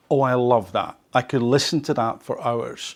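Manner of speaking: ordinary talk, nothing marked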